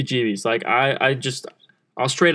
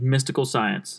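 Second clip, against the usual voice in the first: mock-deadpan delivery; 3 dB quieter than usual. Recapping a show, imitating an interviewee's deadpan answer to the interviewer. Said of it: "deadpans and goes".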